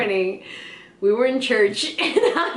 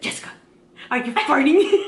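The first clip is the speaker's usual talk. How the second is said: stage whisper off to side; 3 semitones higher than usual. Speaker recounts being whispered a question, retelling a whisper. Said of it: "she whispers to me".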